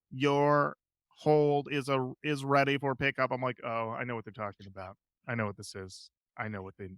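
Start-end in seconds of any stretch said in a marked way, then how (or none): 0.2-3.3 flat, very slow automated robocall-style robot voice. Retelling a phone call the speaker got, in a robot voice. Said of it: "his robot voice goes".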